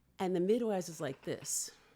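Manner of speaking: ordinary talk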